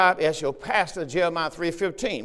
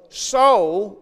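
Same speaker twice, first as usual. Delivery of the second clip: the word soul stressed; 4 semitones higher, 7 dB louder than usual. Reading the passage aloud to listeners, stress on the word soul. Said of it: "Remember the emphasis on the word soul".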